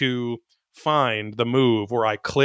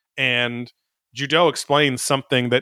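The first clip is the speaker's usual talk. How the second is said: usual speaking voice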